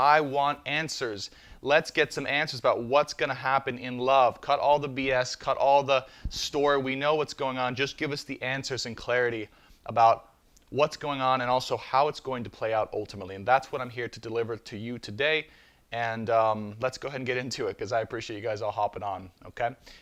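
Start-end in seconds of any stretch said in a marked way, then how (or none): none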